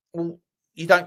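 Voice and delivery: ordinary talk, nothing marked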